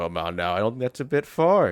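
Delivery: nonchalant, casual villain voice. Reading a suspect's game dialogue aloud: nonchalant villain voice. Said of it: "In his fucking nonchalant, "I'm definitely not a villain," villain voice".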